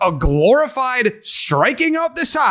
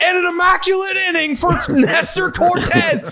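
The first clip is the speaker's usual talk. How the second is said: high, shouted mock broadcaster voice. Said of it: "broadcasters being like".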